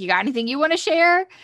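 teasing, jokey tone. Retelling a man's joking question to a woman, imitating a joking remark. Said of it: "he's like jokingly says to Haley".

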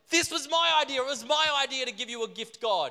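play-acted fury, pitched very high. Storyteller voicing Cain speaking to God, furious, as Cain. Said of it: "Cain is furious because Cain is like".

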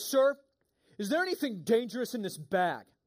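mock firm, no-nonsense, stern official voice. Telling a story, the speaker quotes a man holding his bag: imitating a stern voice. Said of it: "he's got his like stern voice on".

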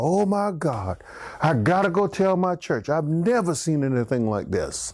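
toned-down little scream, acted out, mildly yelled. Retelling how a mental health worker screamed out: imitating someone screaming. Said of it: "worker screamed out".

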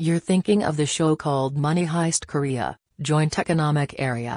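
machine-like put-on robotic voice. Speaker asks a robot voice to recall a show's name, answering in robot voice. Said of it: "robot voice, help us".

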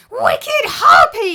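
very high, very loud, shrill scream. A young woman throws herself at her stepmother, screaming. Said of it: "screamed the young woman".

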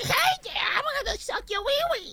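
put-on creature voice. A speaker jokes about what the character says, in an extremely high Ojama Yellow voice. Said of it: "the extremely high-pitched Ojama yellow voice".

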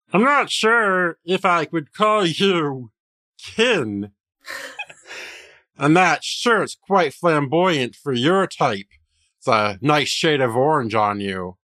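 high-pitched frog puppet character voice. Storyteller voicing a gnome who looks a player up and down, Kermit the Frog voice. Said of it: "let me use like my Kermit the Frog voice".

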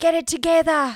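loud, high yelling Australian gym trainer voice. Hearing about a gym where Australians yell at you, imitating a yelling Australian trainer. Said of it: "all these Australians yell at you".

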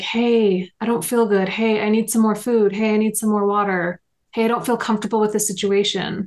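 ordinary talk, nothing marked

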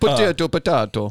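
fake Jamaican accent, badly done, sounding Italian. Podcaster trying out an accent for the others, in a bad Jamaican accent. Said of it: "That was my Jamaican".

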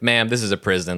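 imitated flat delivery. Reviewer quoting the prison guard's reply to her joke, retelling a deadpan reply. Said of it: "just deadpans the response".

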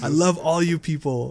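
slow, friendly tone that sounds threatening. Retelling seeing Giancarlo Esposito at a comic convention: imitating Giancarlo Esposito sounding threatening. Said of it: "even when he's saying hello, it sounds like a threat".

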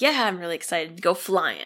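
ordinary delivery

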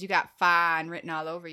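put-on flirty voice, mock flirt mode. Asked for a best pickup line and flirt mode: put-on flirty pickup-line voice. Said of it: "Give me your best, like, flirt mode".

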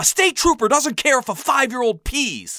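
exasperated, high-pitched yelling. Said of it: "Dad yelled back".

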